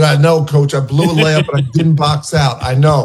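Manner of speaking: ordinary talk, nothing marked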